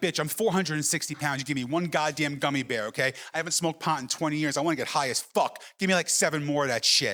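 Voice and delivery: ordinary talk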